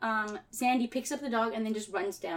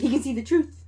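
normal talking voice

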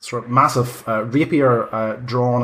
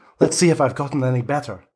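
female character voice; 3 semitones higher than usual. Voicing Irina, a sword fighter facing a party member: Irina's female voice. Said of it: "is it a female voice? / Yes, it absolutely is".

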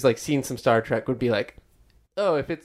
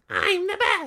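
squeaky, very high little toad voice. Chatting about mushroom zombies, the speaker does a line in a toad voice. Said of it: "you did a good toad voice".

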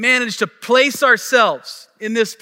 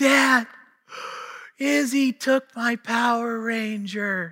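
mock, very slow, tearful crying-child wail; 6 dB quieter than usual. Retelling how a son ran in to complain: imitating a crying child. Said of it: "I heard him crying".

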